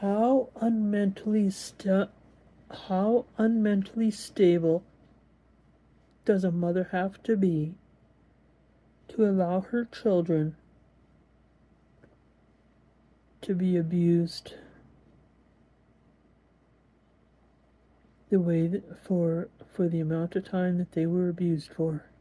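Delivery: on the verge of tears. Speaker asks a question while holding back tears. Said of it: "I'm not going to cry, just the way it's coming out".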